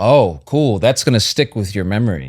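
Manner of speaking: ordinary delivery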